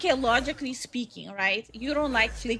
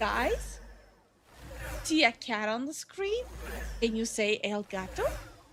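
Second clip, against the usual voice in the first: kids' cartoon host, cartoon-guide style voice; 5 dB quieter than usual. Asking viewers to name a cat on the screen, Dora the Explorer voice. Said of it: "Why am I turning into D-, Dora the Explorer over here?".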